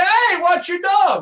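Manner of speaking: angry, high, loud, drawn-out screaming. Acting out a person whose dry cleaning a dog soiled: screaming. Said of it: "So I start screaming".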